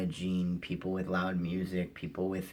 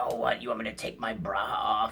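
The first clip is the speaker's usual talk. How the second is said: mock hostile, belligerent, loud, aggressive yell; 3 semitones higher, 4 dB louder than usual. Retelling a woman on a bus yelling at a passenger: imitating aggressive loud yelling. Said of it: "really just aggressive, loud be-".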